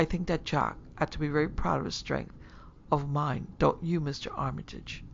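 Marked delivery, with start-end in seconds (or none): none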